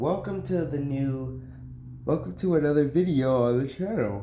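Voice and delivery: yawning while talking. Opening a new channel video for viewers, yawning while talking. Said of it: "sorry for yawning".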